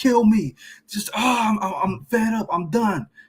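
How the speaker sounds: loud, high, acted crying wail with a crying sound. Speaker acts out a man crying out to Yahweh, mock loud crying out. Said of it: "He's being loud about it".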